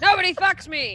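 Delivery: high, loud, angry yell.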